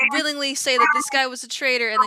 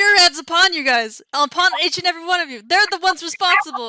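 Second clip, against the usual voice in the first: raised, proclaiming in-character yell; 5 semitones higher, 3 dB louder than usual. Being dragged away by guards, yelling to the crowd: in-character yelling to crowd. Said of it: "just yell it out to everybody".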